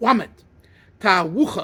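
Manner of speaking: l sounds pronounced as w. Explaining how a man mispronounced a word, saying l as w. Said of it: "some Russians can't say the lamed; they say wamed".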